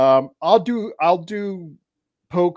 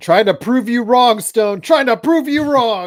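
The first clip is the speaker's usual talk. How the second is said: high, loud yelling. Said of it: "Why are you yelling?".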